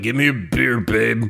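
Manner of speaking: put-on low, boozy, drunk slob voice. Describing a terrible guy, impersonating him as a drunk husband. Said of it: "That's a spot-on impersonation".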